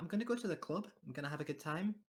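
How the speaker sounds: put-on Brummie accent. Asked to do a Birmingham accent, the speaker gives it a go: Birmingham accent. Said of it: "can you both do the Birmingham accent".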